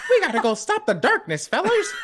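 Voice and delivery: very high pitch with swinging pitch. Joking about a game, imitating Mickey Mouse: Mickey Mouse voice.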